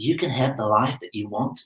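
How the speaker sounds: put-on soft, accidental, Australian-sounding accent slipping in. Quoting someone posing in front of a Ferrari, in an Australian accent. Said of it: "If that's an Australian accent, sorry".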